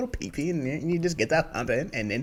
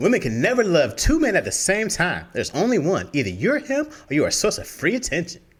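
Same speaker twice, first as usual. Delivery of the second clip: sassy delivery; 2 semitones higher, 3 dB louder than usual.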